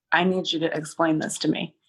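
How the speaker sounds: usual speaking voice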